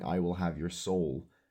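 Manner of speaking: eerie, sinister whispering. Explaining how they made a track's sounds, the speaker does a creepy whisper. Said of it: "the creepy whispers are me like whispering".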